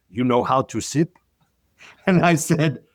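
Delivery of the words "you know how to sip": thick, heavy put-on Russian accent. Retelling what a russian bartender said to him, in a thick russian accent. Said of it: "she said to me in a thick accent".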